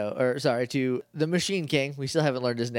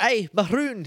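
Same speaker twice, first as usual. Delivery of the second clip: quick, pitched-up put-on Scottish brogue; 8 semitones higher, 3 dB louder than usual. Retelling a scene, voicing the butler: Scottish accent. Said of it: "he's, like, Scottish. And he's like".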